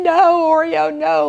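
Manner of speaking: mock high shouted yell. Retelling chasing the cat with a squirt bottle: imitating her own screaming.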